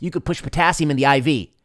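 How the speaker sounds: shout called out loudly. Retelling an answer from the back of a nursing audience: imitating someone shouting. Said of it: "somebody shouted from the back".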